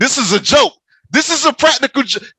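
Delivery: full-on yelling. Telling listeners about waiting for a prank to be revealed, yelling. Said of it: "I'm yelling. I'm sorry".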